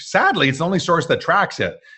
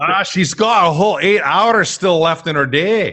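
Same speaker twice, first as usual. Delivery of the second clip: jokey put-on Welsh accent; 4 semitones higher, 3 dB louder than usual. Joking about a viewer whose day is still going: put-on welsh accent. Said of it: "You like my Welsh accent?".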